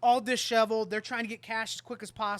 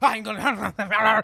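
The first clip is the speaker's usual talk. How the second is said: put-on angry rambling man voice, louder; 7 dB louder than usual. Retelling a customer storming off after a rejected card deal: imitating an angry rambling man. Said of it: "angry, grabbing the stuff off the table".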